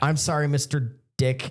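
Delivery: put-on scared, nervous voice. Retelling how the kid next to them apologized to the caller: imitating a scared voice. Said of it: "'Cause he was so scared of".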